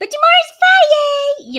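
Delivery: very high, very loud, shrill, swooping squeaky voice. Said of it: "That's my squeaky voice".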